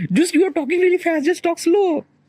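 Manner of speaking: scolding tone, high pitch.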